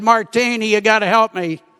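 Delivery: ordinary talk, nothing marked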